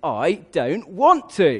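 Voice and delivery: loud, very slow grunt through clenched teeth. Speaker retelling a story about a student answering his challenger; acting out a clenched-teeth grunt. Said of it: "clenched his teeth and he grunted".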